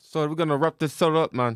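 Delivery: put-on London accent, done badly, loud and high. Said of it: "Don't ever do that again".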